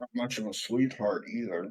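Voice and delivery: tossed-off, muttered side comment. Speaking in character at a family meal: muttering under the breath. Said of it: "I mutter that under my breath".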